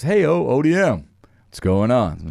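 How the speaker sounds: radio DJ announcer voice. Telling how a man pulled up and greeted you, do the Jesse Duran voice. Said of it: "Jesse Duran voice".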